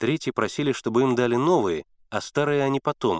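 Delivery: ordinary delivery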